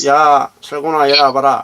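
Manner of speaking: put-on old man's voice. Retelling how his mother suddenly spoke in the grandfather's voice, imitating grandfather's voice. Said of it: "할아버지 목소리".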